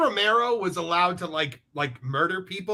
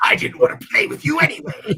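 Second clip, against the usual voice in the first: loud comic-book cartoon villain voice; 8 semitones higher, 5 dB louder than usual. As the Joker answering Superman, who has refused to play his games, in a Mark Hamill Joker voice. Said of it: "That was a good voice".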